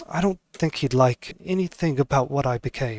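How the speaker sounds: hushed, quiet, confiding voice. Game master voicing a woman speaking only to Huel, quietly.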